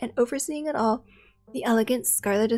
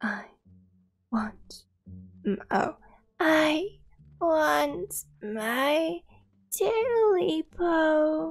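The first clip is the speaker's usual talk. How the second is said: very slow, high, hoarse croak, breaking up; 5 semitones higher than usual. Narrator voices the thing staring from the dark at him: high, hoarse croak. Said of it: "a high, hoarse voice croaked".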